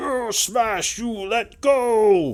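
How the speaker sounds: very high, very slow, broken giant roar. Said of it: "he says something in Giantkin".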